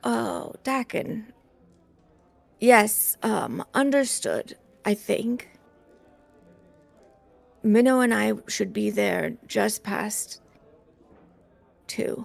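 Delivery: groggy, sleepy, freshly woken-up voice. Voicing a character replying in the mind: freshly woken up, groggy voice. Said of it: "sounding a little, like, freshly woken up".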